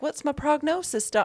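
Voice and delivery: put-on Southern accent in a very high-pitched voice. Retelling a story, the speaker quotes a woman waking after sedation asking her doctor: accidental southern accent. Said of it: "No, she's not Southern".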